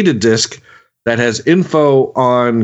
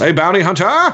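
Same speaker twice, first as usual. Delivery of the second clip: loud yell, pitched up; 6 semitones higher than usual. Narrating a sewer shootout, voicing Kakaterin calling out: Kakaterin yelling. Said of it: "Kakaterin yells".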